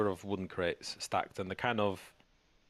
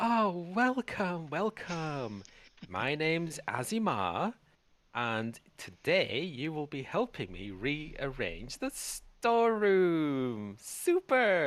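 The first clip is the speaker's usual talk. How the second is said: put-on effeminate snake voice, high and swooping; 7 semitones higher than usual. Voicing a snake who welcomes players to help rearrange the storeroom: effeminate snake character voice. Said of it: "a rather effeminate-looking male snake".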